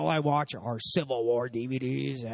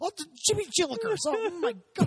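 mock family-friendly angry comedian rant, higher. Imitating another speaker's brother as a family-friendly angry comedian: imitating a friend's brother. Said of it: "angry comedians, that would be, like, your brother".

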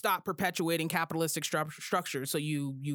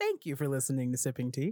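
put-on radio announcer voice, much lower; 5 semitones lower than usual. Host closing the show with thanks to listeners, in his radio announcer voice. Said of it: "he likes to do his radio voice".

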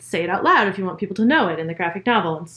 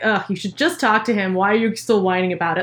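put-on sarcastic mean tone. Imagining what a book character would say: imitating Marco, sarcastic and mean. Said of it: "I can imagine him saying something in that tone of voice".

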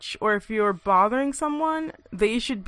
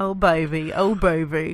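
clumsy, really bad fake Australian accent; 5 semitones lower than usual. Repeating a cartoon line for a co-host, in a bad Rocko's Modern Life Australian accent. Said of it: "that was a really bad Australian accent".

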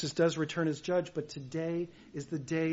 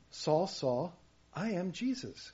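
lovingly tender, gentle voice. Quoting a gentle self-introduction: imitating Jesus' tender introduction. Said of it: "the tender way that Jesus introduces himself".

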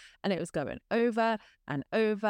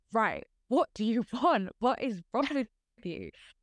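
mock-angry, demanding tone; 2 semitones higher than usual. Speaker retells sitting at home and speaking to it, retelling being mad. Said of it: "I was so mad".

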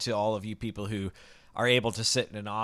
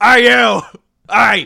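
put-on Brooklyn cop accent, much higher, louder; 12 semitones higher, 20 dB louder than usual. Playing a cop questioning someone, in a bad brooklyn cop accent. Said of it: "where you sound like you're like the handyman from Bob's Burgers trying to arrest someone".

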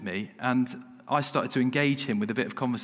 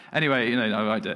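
normal talking voice

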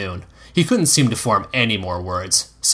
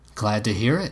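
plain reading voice

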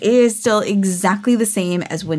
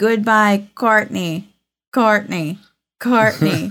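glitching, broken-sounding little alien creature voice. Speaker retelling the end of a ride: broken-sounding e.t. voice. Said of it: "He sounds broken".

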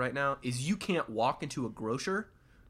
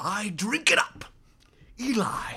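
loud, raised, booming oil man voice; 8 semitones higher, 5 dB louder than usual. Joking about continuing the podcast in this voice, do a Daniel Day-Lewis oil man voice. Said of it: "continue to do this podcast in this voice".

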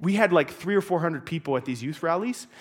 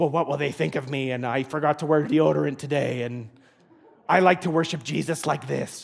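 goofy, silly put-on felt-puppet voice; 3 semitones lower than usual. Voicing someone's worries about raising hands in front of others, in a Muppet voice. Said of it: "That's why I'm using this voice, this Muppet voice".

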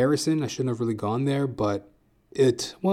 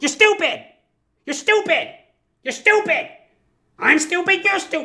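mock very high, aggressive, shrill screaming; 4 dB louder than usual. Speaker acts out a woman in an acting exercise yelling at her scene partner, imitating a woman screaming. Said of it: "she's like screaming at her scene partner".

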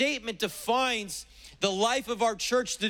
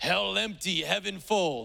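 put-on German accent; 2 semitones lower than usual. Quoting an evangelist's words in imitation: Reinhard Bonnke German accent. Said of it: "said in his great German accent".

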